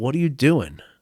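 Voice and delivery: put-on disgusted voice. Retelling his father walking into the bedroom: imitating father's disgusted question. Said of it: "like this disgusted look on his face".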